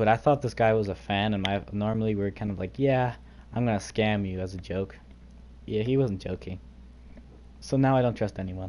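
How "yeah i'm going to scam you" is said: ordinary talk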